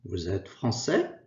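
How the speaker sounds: wide, clear rising intonation on français.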